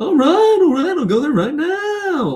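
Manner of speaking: over-the-top comic voice, very high, swooping, stretched out. Showing how most Americans imitate him: exaggerated Jerry Seinfeld impression. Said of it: "that's how they'll do their impression of uh, Jerry".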